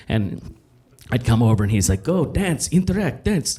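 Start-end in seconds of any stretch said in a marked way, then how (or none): 2.0-3.6 put-on Russian accent. Retelling a director calling the speaker over at a party, Russian director's accent. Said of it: "I don't know why I do his accent".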